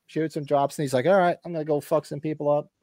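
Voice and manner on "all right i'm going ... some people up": ordinary talk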